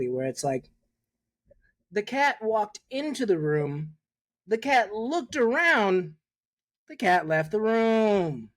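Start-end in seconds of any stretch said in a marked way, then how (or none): 1.9-8.3 newscaster voice with drawn-out cadence. Giving a favorite example of the newscaster voice: newscaster cadence. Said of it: "the newscaster voice is like that cadence exactly".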